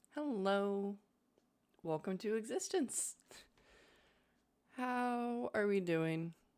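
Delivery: groggy, sleepy, just-woken-up voice. Greeting viewers twenty minutes after waking up: groggy just-woken-up voice. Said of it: "I apologize if I sound a bit dead".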